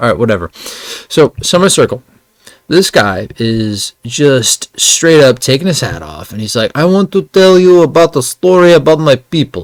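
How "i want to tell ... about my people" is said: put-on, pitched-up Russian accent. Retelling a guy at Summer Circle introducing his story, imitating a Russian accent. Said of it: "he sounds Russian".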